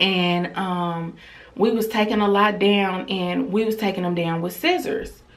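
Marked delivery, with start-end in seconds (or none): none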